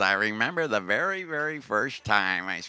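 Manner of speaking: put-on American accent in a recorded-sample style. Describing a much-sampled speaker in trance music, Terence McKenna American accent. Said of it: "He's got this American accent".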